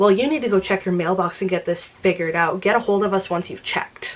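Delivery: mock snide, very snarky customer-service voice. Recounting what a rude UPS phone rep said to her, mocking a snarky rep. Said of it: "in a very snarky tone".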